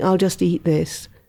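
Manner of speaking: ordinary delivery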